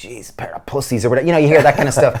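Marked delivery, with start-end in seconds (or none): 0.0-1.0 mumbled quietly under the breath. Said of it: "mumbling under their breath".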